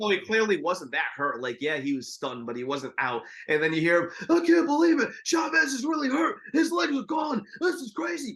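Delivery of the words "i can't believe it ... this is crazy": very high, hoarse announcer voice. Retelling a boxing broadcast, quoting the commentator Bobby Chez: imitating Bobby Chez's hoarse voice. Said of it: "that kinda, like, horse's voice that he did".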